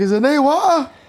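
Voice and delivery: put-on anxious, very high-pitched. Retelling what a man said when he came to fix the water, imitating a worried voice. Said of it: "He had a very worried voice".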